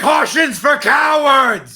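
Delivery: very high, reckless, charging battle-cry yell. Charging through a door toward the tiger as Juan, yelling in character. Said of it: "and yells".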